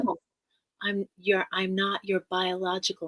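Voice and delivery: ordinary talk, nothing marked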